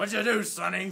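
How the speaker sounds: booming, demanding Marine drill-sergeant voice. Retelling meeting a man in a mechanic's uniform, in a Marine sergeant's voice. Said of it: "It was more like a Marine sergeant's voice".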